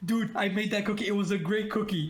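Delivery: mild calling-out tone. Voicing a character who yells about a thrown cookie: character yelling about cookie. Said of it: "I just start yelling at Wee".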